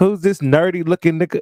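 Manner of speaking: high, mock put-out, offended tone full of attitude. Retelling a woman's remark: imitating an offended attitude. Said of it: "she said it with an attitude, like she was offended".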